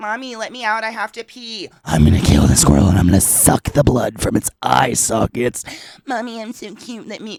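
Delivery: loud, sing-song talking-dog voice. Voicing a poodle that wants out to chase a squirrel: put-on dog voice. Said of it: "she's like".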